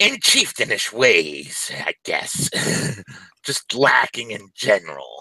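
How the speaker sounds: put-on goblin voice with words drawn out. A game master voices a goblin shaman making the players a proposition, goblin shaman voice. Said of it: "You're approached by a shaman goblin walking in the distance. Her uh, markings and adornments leave her as noticed as a member of the [name] tribe. / Her uh, / Well, they'll not only be welcomed into".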